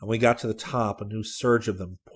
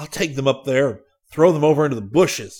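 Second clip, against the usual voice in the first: very loud, high-pitched yell at full volume; 5 semitones higher, 9 dB louder than usual. A man pulls his arm free from a blind man, shouting. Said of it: "Hayes shouted".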